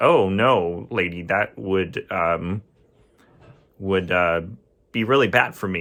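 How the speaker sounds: ordinary delivery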